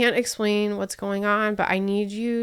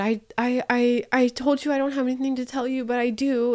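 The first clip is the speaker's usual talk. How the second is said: put-on panicked stuttering speech, higher pitch; 3 semitones higher than usual. Retelling a phone call where the fiance confesses: imitating stuttering panicked speech. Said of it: "he's stuttering and panicked and freaking out".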